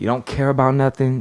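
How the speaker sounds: ordinary delivery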